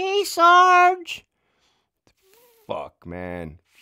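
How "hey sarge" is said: very high, shrill, nagging voice with one word drawn out. Retelling how the women at work greeted sarge: imitating an annoying voice. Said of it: "Fucking annoying ass voice".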